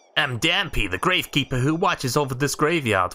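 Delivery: put-on character voice with a New York accent. Reading a game gravekeeper's dialogue aloud, as Dampé in a New York accent. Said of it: "Why'd I keep giving people New York accents?".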